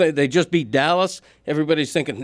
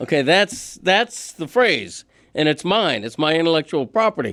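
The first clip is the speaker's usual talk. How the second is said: ordinary delivery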